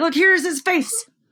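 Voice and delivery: high-pitched, loud, excited and eager tone.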